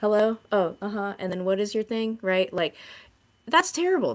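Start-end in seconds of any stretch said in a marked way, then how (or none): 0.0-2.2 absent, half-listening, distracted tone. Imitating a doctor busy on a computer during a visit: imitating a distracted doctor. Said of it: "you see us like".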